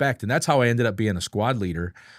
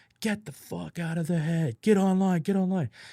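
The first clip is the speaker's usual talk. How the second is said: high, screaming, yelled drill-instructor voice; 8 semitones higher, 3 dB quieter than usual. Retelling a junior drill instructor ordering recruits out: imitating someone screaming. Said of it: "he's screaming in my ear".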